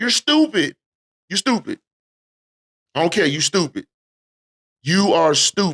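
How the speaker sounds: heated, pointed, emphatic, hammered-home inflection. Calling out someone near fifty who still drinks and drives, with emphatic inflection. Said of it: "I'm saying it with some infl- inflection because I'm I take that stuff personal".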